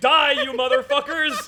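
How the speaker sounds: shrill, very high, frenzied screaming. Describing a drill sergeant spraying tear gas at soldiers, retelling a scream. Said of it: "Just screaming".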